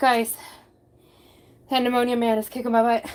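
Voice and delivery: out of breath, breathless. Talking to viewers after simple tasks while sick: out of breath. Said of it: "I'm so out of breath".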